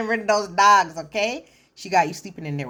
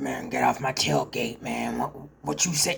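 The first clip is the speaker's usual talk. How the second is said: low, gruff, rough big-guy voice; 6 semitones lower, 5 dB quieter than usual. Describing how Brady talks: gruff, rough Brady voice. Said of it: "Brady has like a very gruff, rough voice".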